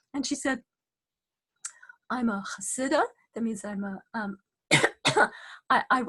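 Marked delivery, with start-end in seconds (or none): none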